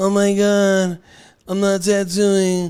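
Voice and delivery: very slow, high, drawn-out whiny complaining tone. Doing an impression of people who complain: mock-whiny complaining voice. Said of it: "this is my impression of people when they bitch and complain".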